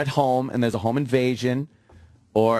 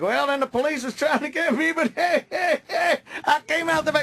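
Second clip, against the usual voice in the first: chuckling, amused, laughing delivery. Retelling how an interviewed murderer talked: imitating a laughing killer. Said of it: "he's kinda laughing like".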